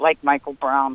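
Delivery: mock under-breath mutter. Retelling what he mutters under his breath when he disagrees. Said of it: "under his breath he'll go".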